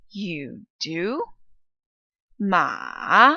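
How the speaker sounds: pitch falls then rises on do. Teaching the third tone with an example, falling then rising pitch. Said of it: "That falling and then rising pitch".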